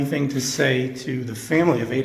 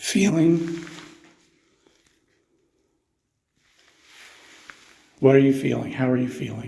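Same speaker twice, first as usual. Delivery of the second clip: choked-up voice, catching with emotion. Asking someone how they are feeling, suddenly choked up. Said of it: "I'm getting choked up here all of a sudden".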